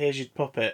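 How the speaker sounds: ordinary talk, nothing marked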